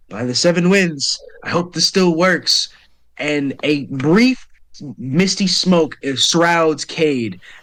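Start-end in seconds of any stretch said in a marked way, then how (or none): 0.2-2.7 quiet mumbling, as if to himself. Voicing a fighter rushing past, mumbling under his breath. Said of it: "he mumbles something under his breath".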